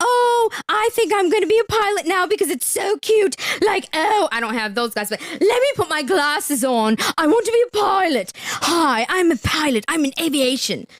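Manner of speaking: sarcastic, mocking, showy influencer poser voice. Contrasting a real pilot with Instagram women who claim to be pilots: mocking Instagram women. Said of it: "she's not one of these Instagram women that's like".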